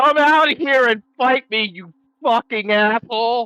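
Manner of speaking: loud, high, enraged furious scream. Voicing a character smashing walls, calling out an enemy: screaming in rage. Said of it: "is just screaming".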